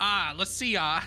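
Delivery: put-on Southern businessman voice. Joking how the character will soon sound: mock southern businessman voice. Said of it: "it's gonna be like".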